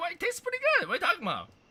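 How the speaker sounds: very high, squeaky cartoon voice. Speaker repeating how they said it to her: Mickey Mouse voice. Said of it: "You're the fucking Mickey Mouse".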